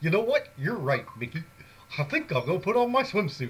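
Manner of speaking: high, loud voice with swooping pitch. Recounting a message once sent to the listener, done in a Goofy voice. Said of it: "then in my goofy voice".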